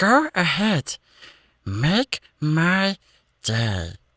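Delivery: high, swooping, very slow, stretched-out voice. Redoing the line after feedback from the others: Stitch voice. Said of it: "we'll just go with Stitch for it then".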